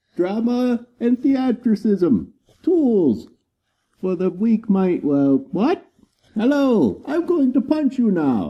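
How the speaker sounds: muffled, showy, obnoxious voice, very high, shrill, swooping. Speaker showing off a new showy helmet, obnoxious voice through a helmet. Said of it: "using his new fancy showy helmet to make his obnoxious voice".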